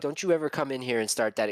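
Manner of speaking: ordinary talk, nothing marked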